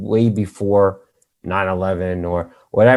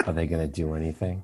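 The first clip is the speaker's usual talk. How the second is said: imitated whispering, lower and quieter; 4 semitones lower, 12 dB quieter than usual. Retelling a movie scene where a character asks about a rescue: imitating a character whispering. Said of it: "this is where he whispers".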